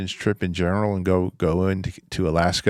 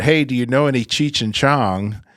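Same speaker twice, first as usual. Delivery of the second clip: casual, high, called-out shout; 5 semitones higher, 4 dB louder than usual. Retelling calling out to someone in the next shower stall: imitating own shout. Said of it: "I just kinda shouted out".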